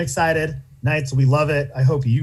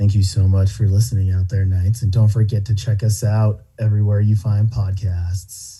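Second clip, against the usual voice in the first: sexy, seductive, low, sultry put-on voice; 6 semitones lower than usual. Signing off to the listeners with an outro: put-on sexy voice. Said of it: "I can do a nice, like, sexy voice".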